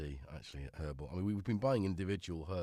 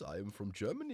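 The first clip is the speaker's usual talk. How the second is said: silly bad fake Danish accent, higher; 3 semitones higher than usual. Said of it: "silly voices like this".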